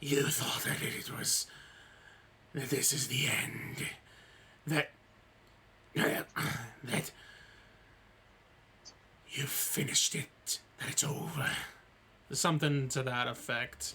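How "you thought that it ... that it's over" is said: rasping, raspy monster voice. Retelling what a creature said in a game: imitating a raspy creature voice. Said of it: "I guess I can try to imitate it".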